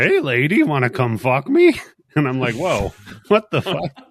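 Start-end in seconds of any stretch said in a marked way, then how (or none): 0.0-1.7 loud, swooping old cartoon car voice. Retelling how a talking car spoke to her, in a Hanna-Barbera dune buggy voice. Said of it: "this is a fucking dune buggy voice from the Hanna-Barbera cartoon".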